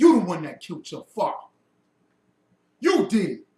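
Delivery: very loud, booming, heavy deep bass voice. Speaker acts out a character from Lion King, imitating his deep bass voice. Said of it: "he put bass in his voice".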